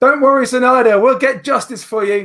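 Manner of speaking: very high, loud shouted call. Voicing a character leaving down a corridor: shouting. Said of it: "And then he shouts".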